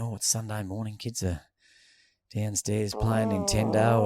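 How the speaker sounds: usual speaking voice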